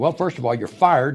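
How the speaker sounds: usual speaking voice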